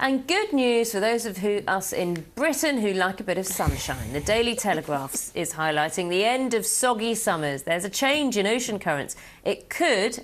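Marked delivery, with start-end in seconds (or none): 9.4-10.2 upbeat newsreader voice, could stressed and lifted high. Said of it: "and I stress the word could".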